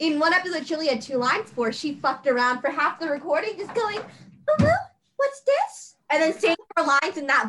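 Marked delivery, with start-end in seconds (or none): 4.5-5.9 very high, put-on anime girl accent. Describing how she played around during a recording; anime girl voice. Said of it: "Anime girl accent".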